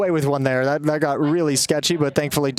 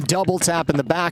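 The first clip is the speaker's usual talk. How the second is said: normal talking voice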